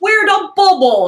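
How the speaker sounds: put-on, loud, very high New York cop accent. Acting out a cop who comes by the teenage kids at the pool, with a New York accent. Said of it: "He's got this New York accent".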